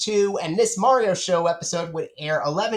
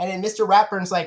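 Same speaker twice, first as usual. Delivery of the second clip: ordinary talk, nothing marked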